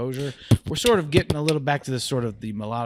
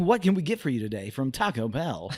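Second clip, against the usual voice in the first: canned, automated drive-thru speaker robot voice; 3 semitones higher than usual. Retelling ordering food at Taco Bell, the speaker does the Taco Bell AI voice. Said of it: "They had the A I voice".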